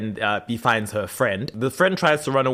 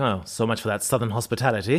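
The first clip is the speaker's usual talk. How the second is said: put-on British accent, audibly annoyed; 2 semitones lower, 4 dB quieter than usual. Recapping a scene, Klaus drops his southern accent with a woman: mock-annoyed Klaus, British accent. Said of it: "drops the accent and is like".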